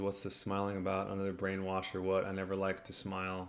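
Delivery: ordinary talk, nothing marked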